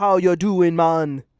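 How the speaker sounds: put-on Jamaican accent. Greeting a jamaican man, in a jamaican accent. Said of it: "Jamaican man?".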